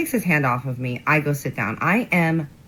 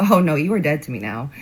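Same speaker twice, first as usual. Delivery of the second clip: usual speaking voice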